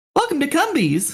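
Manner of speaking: very high restaurant-host voice. Greeting someone at a Cumbies, in a "Welcome to Chili's" delivery. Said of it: "said to the tone of "Welcome to Chili's."".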